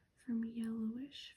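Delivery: ordinary delivery, nothing marked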